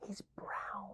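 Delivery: very soft, breathy, barely voiced whisper. Acting out a caller reporting a bear to 911, whispering.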